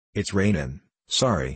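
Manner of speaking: ordinary delivery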